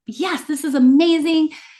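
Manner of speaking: cheerleader-style delight, high and drawn-out. Retelling own words at a weigh-in: imitating own cheerleader excitement. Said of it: "I'm a cheerleader".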